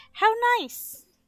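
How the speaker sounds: shrill, very high, loud, smiling grandma voice. Imagining gran looking at the mural and turning round: imitating gran smiling.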